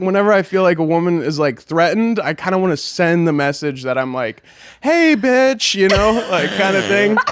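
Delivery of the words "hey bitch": very high, flamboyant, sassy camp voice.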